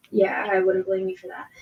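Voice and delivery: smirking, wry voice. Voicing a character who smirks while answering a cautious stranger: smirking voice. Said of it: "you can hear it in his voice as he goes".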